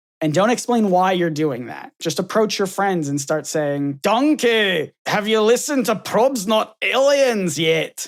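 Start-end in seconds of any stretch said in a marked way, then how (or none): 4.0-8.1 badly done, slow, put-on Scottish accent. Acting out walking up to friends without explaining: bad scottish accent. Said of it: "That's my that's my Scottish accent".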